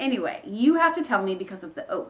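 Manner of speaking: ordinary talk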